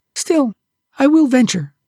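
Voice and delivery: high, trembling, frightened, feeble near-death voice. The little mermaid answers a grim warning: trembling like a dying person. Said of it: "pale and trembling as a dying person".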